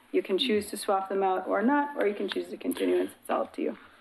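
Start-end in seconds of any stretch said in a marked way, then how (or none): 2.0-3.0 very fast, rushed, rattled-off speech. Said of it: "you said that all really fast".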